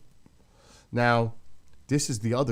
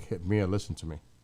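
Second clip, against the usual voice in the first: ordinary talk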